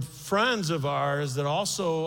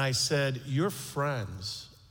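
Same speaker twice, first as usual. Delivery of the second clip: usual speaking voice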